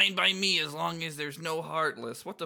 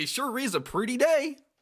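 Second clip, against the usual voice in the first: hammed-up, exaggerated cartoon dog voice; 8 semitones higher, 3 dB louder than usual. Taking a dare to say Goofy's line, Goofy voice. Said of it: "in Goofy voice".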